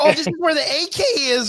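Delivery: put-on, very high-pitched yelled shout. Retelling walking around and pointing things out: imitating own past yelling. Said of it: "I'm over here yelling like".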